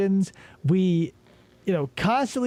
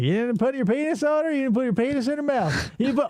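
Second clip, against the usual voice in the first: put-on quick, pitched-up Southern woman's accent; 5 semitones higher than usual. Speaker imagines an interrogation; do a female detective with a southern accent. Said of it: "a female detective with a southern accent being like".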